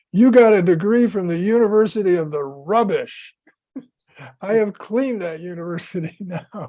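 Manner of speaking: mock, loud, booming voice filling the room. Retell a man's answer to a student who says he already has a degree, in a booming voice. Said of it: "booming voice".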